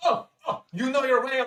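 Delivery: put-on French accent. Voicing the chef in a game scene: french accent. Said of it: "Now I'm slipping into a French accent".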